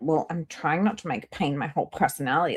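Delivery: cranky, grumpy, huffy defensive tone. Retelling her reply to a commenter: imitating someone grumpy. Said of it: "she was so grumpy about it".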